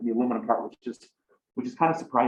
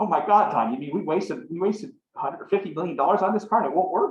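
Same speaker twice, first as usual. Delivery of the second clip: big, exaggerated, put-on Texas accent, pitched high; 6 semitones higher than usual. Retelling what a big Texan man said to Tom, in a Texas accent. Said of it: "He had this great Texas accent".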